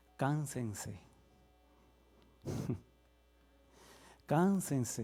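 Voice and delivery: soft, sarcastic, mocking tone. Speaking to the church audience, being sarcastic. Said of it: "Estoy siendo sarcástico".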